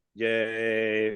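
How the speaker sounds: mock flat, unenthusiastic "yay". Retelling a movie crowd cheering, imitating an unenthusiastic cheer. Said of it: "no enthusiasm in it whatso-, whatsoever".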